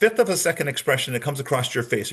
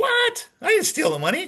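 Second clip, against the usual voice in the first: pitch leaping way up, swooping all over. Demonstrating how someone asked about stealing money answers, pitch jumping way up. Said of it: "My pitch went way up".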